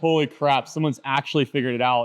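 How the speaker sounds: normal talking voice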